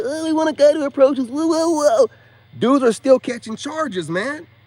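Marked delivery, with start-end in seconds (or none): 0.0-2.1 high, loud, whiny mock voice. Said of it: "get online and whine and say".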